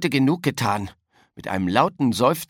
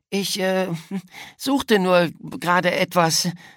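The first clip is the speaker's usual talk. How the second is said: high, stumbling, stammering voice; 5 semitones higher than usual. Caught with a sports bag's contents, a boy answers his classmates, stammering. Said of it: "stammelte Florian".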